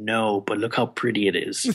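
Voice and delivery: soft whispered voice. Retelling a reply to a question in a movie theater: imitating own whisper. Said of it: "And I whispered and I said".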